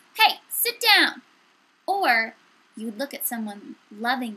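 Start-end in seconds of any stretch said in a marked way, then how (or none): 0.2-1.2 very loud, high-pitched raised voice. Explaining how nonverbal cues add emphasis, giving an example: raised voice. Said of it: "Maybe you would raise your voice".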